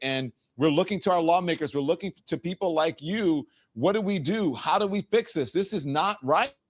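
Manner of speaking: high, worked-up, angry voice.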